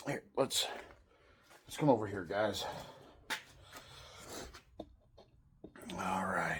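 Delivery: breathing heavily. Leading viewers over to the engine work, breathing heavily. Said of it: "Sorry if I'm breathing heavy".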